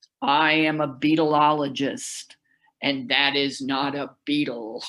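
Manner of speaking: very deep, towering, indignant expert's voice. Retelling what a man said after standing up, imitating a very deep voice. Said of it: "had a very deep voice and said".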